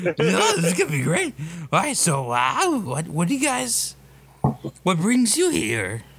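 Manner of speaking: odd, high-pitched, swooping creature voice.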